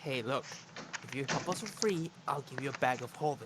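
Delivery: quiet whispered voice. Playing a character offering a ship captain a bribe: whispering in character. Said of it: "and just whisper".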